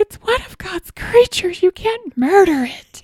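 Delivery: put-on, very high, frantic, freaked-out pleading. Retelling how she reacted in the kitchen, imitating her: mock freaked-out plea. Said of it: "she freaked out".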